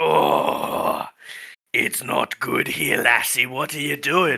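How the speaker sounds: slow, gritty, gravel-edged rasping voice. Voicing a character who arrives and questions the group: gravelly voice. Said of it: "gravelly voice sign language".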